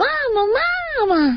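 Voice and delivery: high squeak like a newborn chick. Asked how the baby sounds, the actor demonstrates his Baby Mumble voice. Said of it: "and the baby sounds like".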